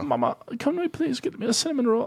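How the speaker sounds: very high bad English accent sliding into Australian. Acting out what they asked their mom as a child: failed English accent, sounds Australian. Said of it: "just came out like Australian or something".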